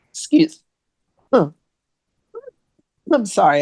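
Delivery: sputtering choked voice. Apologizing mid-conversation to the other speaker, choking while talking. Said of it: "I'm choking".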